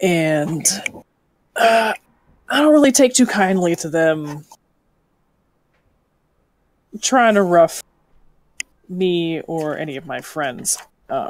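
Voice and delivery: confiding, secretive tone. A woman at the table speaks to the party in hushed tones. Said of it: "She's going to be speaking in more hushed tones".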